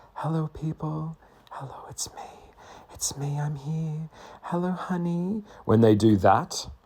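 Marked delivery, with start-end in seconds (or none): 0.2-5.5 high, hushed, light whispery voice. Speaker mocks women who whisper in YouTube videos, mock whispery YouTube voice. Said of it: "when she's talking like this".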